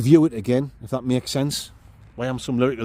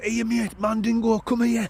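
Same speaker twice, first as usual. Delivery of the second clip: put-on shout in a man's manner, higher; 9 semitones higher, 4 dB quieter than usual. Retelling how a man called out on the way to a match: imitating a man shouting over. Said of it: "A bloke shouts over".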